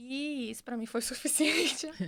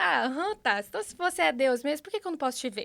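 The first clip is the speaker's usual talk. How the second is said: play-acted loud, defiant, argumentative tone; 3 semitones higher, 6 dB louder than usual. Retelling how she argued with God like a friend: imitating her own defiant tone. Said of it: "Tipo, desse jeito, com esse tom".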